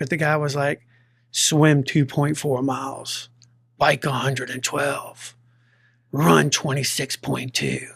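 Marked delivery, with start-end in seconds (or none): 1.3-7.9 put-on deep-voiced announcer narrator voice. Retelling an Ironman video's narration: imitating a deep-voiced video narrator. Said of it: "he's got that deep voice".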